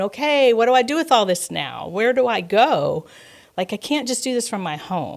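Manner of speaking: crying, tearful, pleading tone. Retelling own words while driving down a street crying: re-enacting own crying words. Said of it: "driving down Ramsey Street crying, going".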